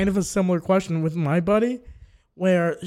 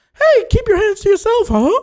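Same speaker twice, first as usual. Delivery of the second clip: very high, loud and swooping voice; 14 semitones higher, 9 dB louder than usual. Describing an old studio memo, the speaker acts out its message in Mickey Mouse voice. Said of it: "Mickey Mouse going like".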